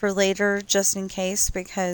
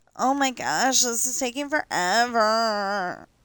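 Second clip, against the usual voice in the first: whiny, slow, dragging, drawn-out complaint; 3 semitones higher than usual. Describing dragging heels over fifteen pages, imitating own whiny voice. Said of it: "I'm sorry, that was whiny".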